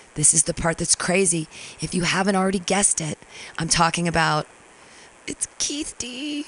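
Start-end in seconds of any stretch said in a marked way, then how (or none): 5.3-6.5 very high, hushed, barely-voiced whisper. Saying a name aloud reluctantly, whispering. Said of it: "I have to whisper it".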